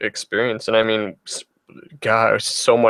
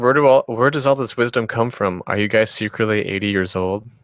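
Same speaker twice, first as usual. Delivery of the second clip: normal talking voice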